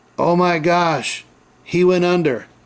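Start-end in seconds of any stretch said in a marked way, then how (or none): 0.2-1.3 put-on scream, only hinted at, slow and mild. Retelling what a lady on her porch yelled out: imitating someone screaming. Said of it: "She yelled out".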